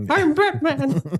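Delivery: squeaked out, high and loud. Retelling a comedy short where Batman tries out voices: Mickey Mouse voice. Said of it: "tried the Mickey Mouse voice".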